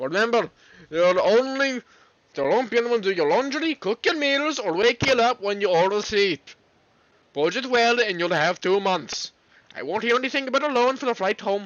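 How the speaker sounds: unsure put-on Welsh accent. Performing a dad's parting advice to his child, in an attempted Welsh accent. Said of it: "That was an Welsh or".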